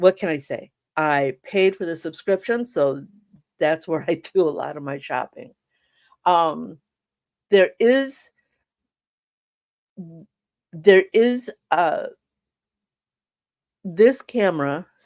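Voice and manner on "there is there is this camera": slower stuttering. Speaker describing a camera bought on Amazon, stuttering. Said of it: "I'm starting to stutter here".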